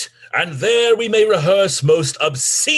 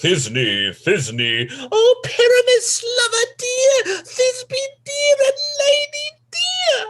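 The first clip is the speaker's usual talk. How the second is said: very high, tiny, squeaky, swooping voice. A player offers to play Thisbe too, monstrous little Thisbe voice. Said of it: "I'll speak in a monstrous little voice".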